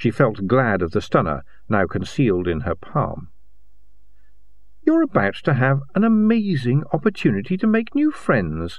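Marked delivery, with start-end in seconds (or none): 4.8-8.8 sweet, sugary, honeyed, lightly raised voice. A woman with a stunner hidden in her palm addresses someone; said sweetly. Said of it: "she said sweetly".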